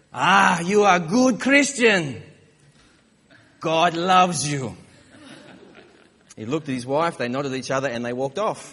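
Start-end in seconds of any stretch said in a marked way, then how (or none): 0.2-4.8 very loud, slow, heavy put-on European accent. Retelling the stranger's reply to the family: imitating a thick European accent. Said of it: "with a thick European accent".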